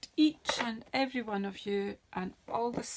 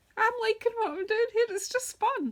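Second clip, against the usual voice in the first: gleeful, very high, loud squeak; 13 semitones higher, 6 dB louder than usual. Speaker telling listeners they enjoy what they're doing: squeaky voice. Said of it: "You can hear it in the squeak in my voice".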